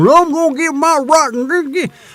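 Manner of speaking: shrill, very high, wacky fanatic ranting voice. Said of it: "not all of them sound like that".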